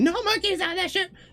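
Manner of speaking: very high, all-out, top-of-lungs scream. Describing what the others hear Gregory yell from below: screaming at the top of lungs. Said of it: "just screaming at the top of his lungs".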